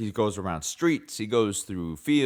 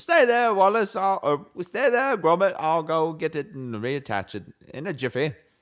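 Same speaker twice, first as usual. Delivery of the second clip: put-on, pitched-up English accent, cartoon-character style; 8 semitones higher, 3 dB louder than usual. Retelling a Wallace and Gromit scene: Wallace impression, English accent. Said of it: "work on your English accent".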